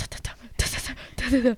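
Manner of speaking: pounding heartbeat sound.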